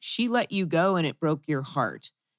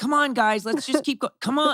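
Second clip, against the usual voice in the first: mock exasperated, fed-up impatience, higher pitch; 8 semitones higher than usual. Telling someone how he reacted during a blooper: imitating frustrated impatience. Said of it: "You were actually getting frustrated".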